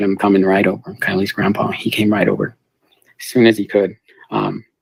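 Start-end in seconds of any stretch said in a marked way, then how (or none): none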